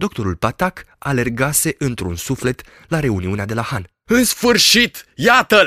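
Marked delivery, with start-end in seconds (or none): 4.0-5.7 very high, loud, full-throated roaring bellow. As the doctor arrives at the gathering at the inn, the master calls out; roaring. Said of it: "Răcni jupânul colț".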